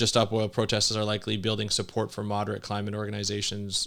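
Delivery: ordinary delivery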